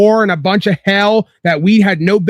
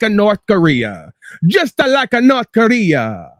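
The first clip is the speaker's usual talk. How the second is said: slow, swooping put-on old-world Italian accent. Ranting at his listeners, slipping into an old-world Italian fascistic accent. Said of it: "That's my old world Italian fascistic accent".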